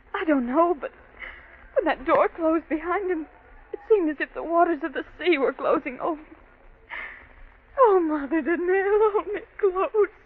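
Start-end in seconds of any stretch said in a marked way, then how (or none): 7.7-10.0 slow, frightened, scared pleading voice. Pleading to be held close by Mother Donnell: frightened. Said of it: "I'm so afraid".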